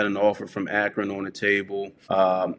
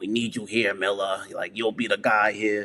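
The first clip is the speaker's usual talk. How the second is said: put-on, fired-up New York accent. Retelling a call from the offensive coordinator, imitating a new york accent. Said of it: "he had that New York accent".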